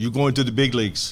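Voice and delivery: imitated Puerto Rican accent. Retelling how your manager gave you the news at the stadium, Max Oliveris impression, Puerto Rican accent. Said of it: "He's from Puerto Rico. I loved his accent".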